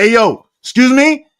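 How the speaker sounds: very loud, very high, booming, drawn-out yell. Shouting out to dads, the speaker acts out a dad raising his voice. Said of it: "The dads that just raised their voice".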